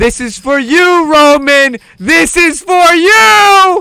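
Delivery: re-enacted screaming. Retelling screaming into the mic at Roman while twerking: retelling a scream into the mic. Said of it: "I'm screaming into the mic".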